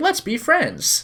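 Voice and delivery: very high, little wind-up toy robot voice. Describing a wind-up robot in a game: Lizzie the robot voice. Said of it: "she starts getting weird".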